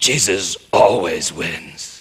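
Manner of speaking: mock tortured, anguished, pained delivery. Retelling what someone said while leaving after hearing jesus wins: retelling an agonized voice. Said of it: "in this absolutely agonized voice".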